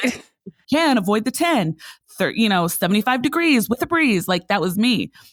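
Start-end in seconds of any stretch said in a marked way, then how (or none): 0.0-4.3 local radio traffic-report announcer voice. Describing the old radio job doing weather and traffic, imitating a radio traffic announcer. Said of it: "I would be that voice that comes on on the radio".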